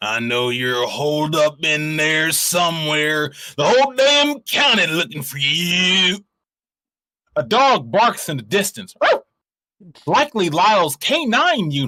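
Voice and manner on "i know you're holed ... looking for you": irritated, annoyed sheriff voice. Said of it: "the sheriff's voice drifts across the desert air".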